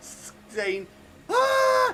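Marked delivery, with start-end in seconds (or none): 1.3-1.9 high, loud, slow, terrified, panicked screams. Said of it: "customers are literally screaming".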